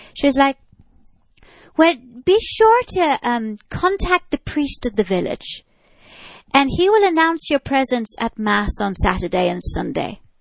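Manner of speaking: bad, terrible put-on Irish accent. Retelling what a lady told the film crew, in a terrible irish accent. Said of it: "forgive my terrible Irish accent".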